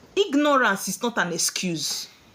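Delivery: ordinary talk, nothing marked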